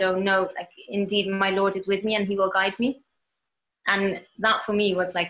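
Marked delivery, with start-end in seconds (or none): none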